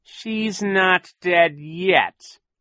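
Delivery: dreadful, menacing, terrible voice, loud and drawn out very slowly. A captain steps toward a frightened woman and speaks in a terrible voice. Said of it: "Captain Sham said in a terrible voice".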